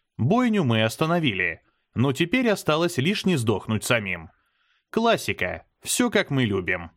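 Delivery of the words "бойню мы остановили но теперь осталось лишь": ordinary delivery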